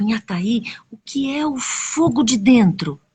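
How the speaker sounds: ordinary delivery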